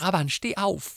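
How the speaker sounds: very high, piercing, shrill scream. The narrator screams to a brother collapsed on the ground, screaming in a shrill voice. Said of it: "schrie ich mit schriller Stimme".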